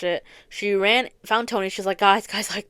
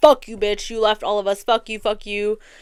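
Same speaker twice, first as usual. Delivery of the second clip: restrained, low-key, half-raised yell; 4 dB louder than usual. Retelling a scene where a character low-key yells at Steve: imitating someone yelling. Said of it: "She low-key yells at Steve".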